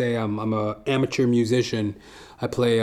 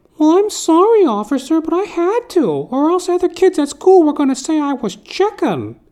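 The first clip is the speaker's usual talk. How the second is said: very high, loud, animated, swooping schoolkid voice; 7 dB louder than usual. Retelling the kid's excuse to the officer, imitating the kid. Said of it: "The kid goes".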